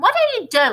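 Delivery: put-on piercing, shrill, loud old woman voice, called from afar. Narrator reading Grandma calling to George from the next room, shrill voice. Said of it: "came the shrill voice from the next room".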